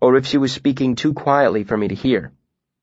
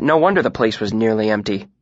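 ordinary delivery

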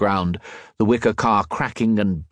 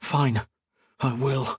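forced out between gritted teeth; 3 semitones higher, 4 dB quieter than usual. Read aloud, a woman answers a man's calm advice: through clenched teeth. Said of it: "said through clenched teeth".

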